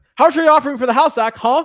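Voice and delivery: mock pushy voice. Acting out someone pressing Zach with a question; retelling someone going hard. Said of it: "they go really hard on me".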